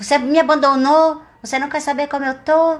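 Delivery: hurt, angry, dramatic delivery thrown out.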